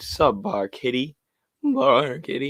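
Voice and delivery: slow delivery, voice breaking mid-word. Host greeting people as they arrive in the stream, voice cracking. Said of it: "My voice cracked there".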